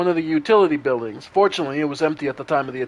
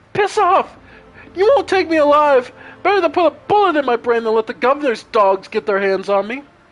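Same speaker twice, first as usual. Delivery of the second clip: put-on shrill very high boyish yell; 11 semitones higher, 4 dB louder than usual. The narrator voices someone shouting from behind a solid door, in a high boyish voice. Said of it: "a high boyish voice shouts out".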